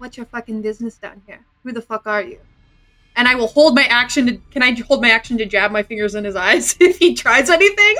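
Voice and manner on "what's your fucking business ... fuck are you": very quiet, quick murmur. Player in a game speaking as their character to a man, very quiet. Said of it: "just very quietly say".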